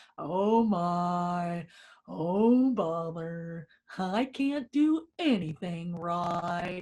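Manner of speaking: very slow donkey voice, stretching out "my". A speaker demonstrating the funny voice used for the inner critic: Eeyore voice. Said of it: "my funny voice is Eeyore".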